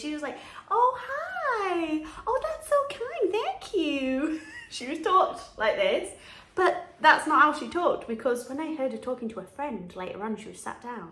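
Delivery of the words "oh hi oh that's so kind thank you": put-on very high, slow princess voice, American accent. Retelling a costumed woman posing for donation photos at a charity shop, in an American Disney-princess voice. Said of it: "she spoke in an American accent. She spoke like one of the Disney princesses".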